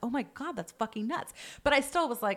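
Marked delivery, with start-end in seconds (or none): none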